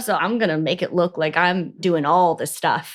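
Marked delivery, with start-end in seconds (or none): none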